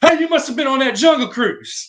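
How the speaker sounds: put-on very loud, high, rural southern accent holler. Quoting a hillbilly's punchline to a sunburned guy, in the most southern voice ever. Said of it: "in the most southern voice ever".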